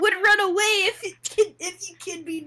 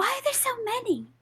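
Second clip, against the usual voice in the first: very soft, very quiet, hushed, under-the-breath; 4 semitones higher, 6 dB quieter than usual. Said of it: "very quietly".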